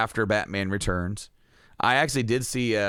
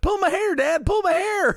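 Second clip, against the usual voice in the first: very high, loud, begging, pleading yell; 5 dB louder than usual. Retelling how the speaker yelled at dad in the store, retelling a yell. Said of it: "now I'm like yelling at him".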